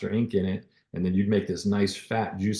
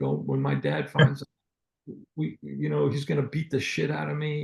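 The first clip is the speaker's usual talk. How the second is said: mock weeping child voice, higher and slower; 6 semitones higher than usual. Retelling a kid locked in with him by cops, imitating a weeping kid. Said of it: "he's like weeping".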